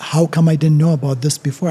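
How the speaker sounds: ordinary delivery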